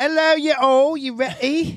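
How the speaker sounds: put-on British accent, pitched very high. Joking about showing up to an episode talking in a British accent: put-on British accent. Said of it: "started talking British accent".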